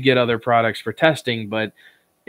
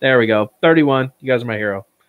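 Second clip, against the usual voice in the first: plain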